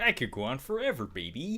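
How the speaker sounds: put-on heavy Chicago gangster accent, high and swooping. A host quotes the gangster from Home Alone 2, in a very Chicago accent. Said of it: "With his very Chicago accent".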